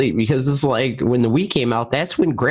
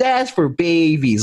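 put-on little kid voice, like a TV commercial; 5 semitones higher than usual. Reading comments aloud in the voice of a commercial kid: imitating a kid from a commercial. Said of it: "I always read those comments and the voice of".

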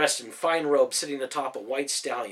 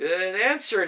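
abashed, sheepish, pitched-up voice; 6 semitones higher than usual. A man surrounded by soldiers' spears raises his hands, sheepish. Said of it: "smiled sheepishly".

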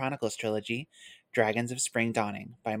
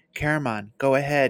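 firm, raised commanding tone; 2 semitones higher, 8 dB louder than usual. Reading a novel aloud, a character gives an order to a companion, commanding. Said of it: "he commanded".

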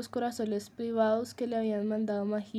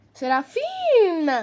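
shrill, very loud shriek; 7 semitones higher, 10 dB louder than usual. A voice calls out as a door bursts open, shrieking a name. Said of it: "chilló su voz".

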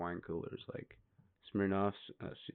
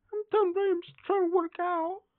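very high, pitched-up squeak; 3 dB louder than usual. Joining a bit about a quarterback told to leave a park: imitating Tom Brady. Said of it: "He's like".

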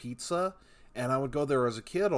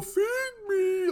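squeaky, shrill, very high arcade-machine voice; 3 dB louder than usual. Retelling what the Big Bertha arcade machine said: imitating the Big Bertha machine. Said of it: "like that".

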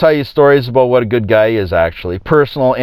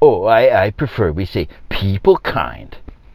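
drawn out, slow, dripping with scorn and derision; 3 semitones lower than usual. Retelling a politician correcting a woman in a crowd: mocking Justin Trudeau impression. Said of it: "this idiot Trudeau says".

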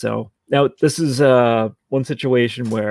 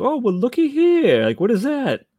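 very high, slick, swooping smooth-talker voice; 13 semitones higher than usual. Retelling a show scene about found drugs, imitating a smooth character. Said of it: "how he says it".

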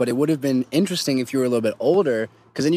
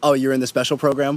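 ordinary delivery

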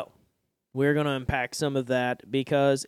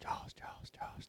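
barely audible whisper. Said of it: "sound effects".

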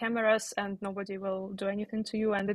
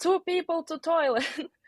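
put-on odd, shrill, screeching yell; 8 semitones higher, 5 dB louder than usual. Act out a woman controlling the line at a gas station, imitating screaming in a strange voice. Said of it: "she was screaming with a strange voice like".

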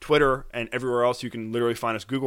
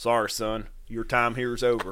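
put-on Texan accent. Acting out the man Eddie in a made-up bank robbery scene, Texan accent. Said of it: "Why does he have an accent?".

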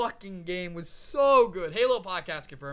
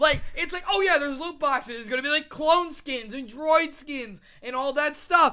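heated, angry, pitched-up rant; 9 semitones higher, 4 dB louder than usual. Ranting on a podcast to another host, angry. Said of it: "You sound pretty angry there".

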